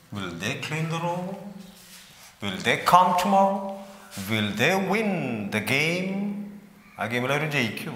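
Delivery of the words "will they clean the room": pitch rises on the word room. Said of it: "Rising intonation".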